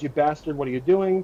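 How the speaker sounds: usual speaking voice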